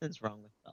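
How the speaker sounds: muttering under breath, not very loud. Speaking in character about belle: muttering, not super loud. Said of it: "muttering, like, not, not, like, super loud".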